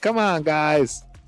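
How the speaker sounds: high, mocking put-on imitation voice. Mocking how a drafted player talks to the media: Mendoza voice. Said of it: "that's my Mendoza voice".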